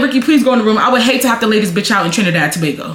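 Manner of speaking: normal talking voice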